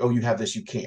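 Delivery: ordinary delivery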